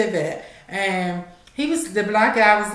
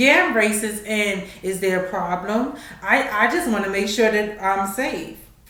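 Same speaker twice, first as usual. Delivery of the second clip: plain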